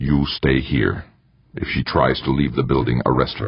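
ordinary delivery

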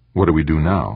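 plain reading voice

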